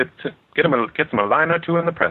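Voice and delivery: put-on high-pitched upper-class British accent. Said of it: "Do you know how to do British?".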